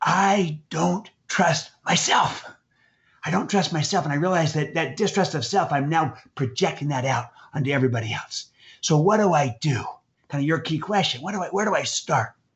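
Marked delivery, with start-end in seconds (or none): 0.0-4.0 slow, intimate, confiding tone. Retelling what a man said when he leaned in: retelling a whisper. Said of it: "leaned in and whispered to me".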